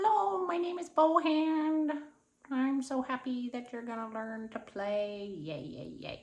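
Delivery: slow, playful hand-puppet character voice. Showing how the bow hand talks to little children: puppet voice for the hand. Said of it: "you say, you know, I do this with little children".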